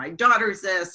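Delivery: normal talking voice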